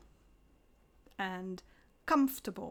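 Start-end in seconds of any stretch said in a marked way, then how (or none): 2.1-2.7 comfortable with COM stressed, higher and louder. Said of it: "We stress the first syllable, so we say".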